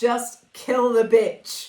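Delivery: put-on loud, slow shout. Retelling what test audiences shouted at a film: imitating audience shouting. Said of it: "people were shouting".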